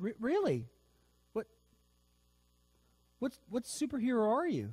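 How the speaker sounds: very high, confused, stumbling, swooping pitch. Telling a joke, voicing a woman who questions a superhero: acting confused. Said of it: "she looks kind of confused".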